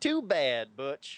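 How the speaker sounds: ballpark announcer voice with North Carolina drawl. Quoting a ballpark pa announcer after a strikeout, imitating north carolina drawl. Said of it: "that woman with that great North Carolina drawl".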